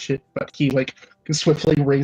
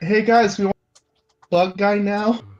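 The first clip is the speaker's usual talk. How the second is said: loud, higher-pitched yell, calling out; 6 semitones higher than usual. Voicing a character calling over to the group: yelling in character. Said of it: "Dom just yells out over there".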